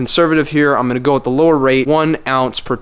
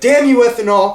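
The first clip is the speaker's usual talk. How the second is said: aggressive, hot-headed shouting, pitched up; 9 semitones higher than usual. Imitating people who get too aggressive with fuel agitation: mock-aggressive yelling. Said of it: "they'll start yelling at it".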